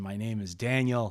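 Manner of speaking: put-on old man voice with very thick Swahili accent. Retelling how an old guy held out his hand and introduced himself, in Daniel's very thick Swahili accent. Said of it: "thick Swahili accent".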